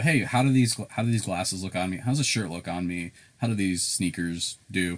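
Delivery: ordinary talk, nothing marked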